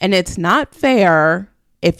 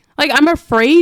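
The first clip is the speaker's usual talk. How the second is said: plain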